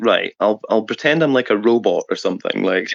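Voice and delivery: ordinary talk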